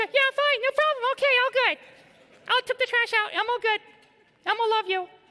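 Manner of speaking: very high, squeaky voice. A husband answering his wife asking if he's okay, in an Elmo voice. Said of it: "When I start sounding like Elmo".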